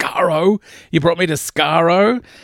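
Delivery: loud, high-pitched shouted outburst. Recapping a story where the Doctor yells at Davros; retelling the Doctor's yell. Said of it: "he yells at Davros".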